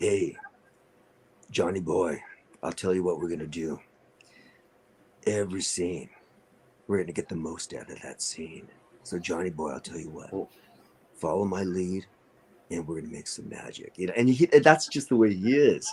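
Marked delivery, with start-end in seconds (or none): 0.0-13.9 very deep, soft put-on voice. Quoting a joker guy who calls him Johnny boy: imitating a deep voice. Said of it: "deep, deep, deep voice".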